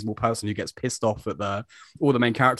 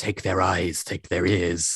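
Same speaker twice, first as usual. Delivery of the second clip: put-on snake-like hissing voice, lower pitch; 4 semitones lower than usual. Quoting a villain's order from the episode: snake-like Vanek voice. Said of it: "like a snake talking to you".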